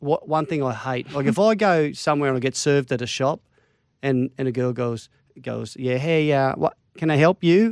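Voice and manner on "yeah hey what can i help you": put-on American accent. Retelling how a shop worker greeted them: imitating an American accent. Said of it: "Are you American?".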